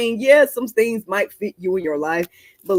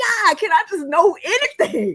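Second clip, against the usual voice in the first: frustrated yell, higher pitch; 12 semitones higher than usual. Retelling looking up at the ceiling: imitating own past yelling at God. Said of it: "Just looking up and yelling at the Lord".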